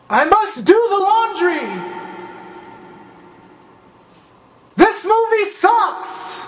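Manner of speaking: slow, grandiose, self-important echoing voice. Trying out the film's echo trick to sound important: mock important echoing voice. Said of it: "if they added an echo, it'll make it sound more important".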